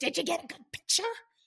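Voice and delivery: high, creepy, eerie, rasping voice. Retelling what a woman said as she walked out the door, raspy voice. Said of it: "It was like a raspy voice".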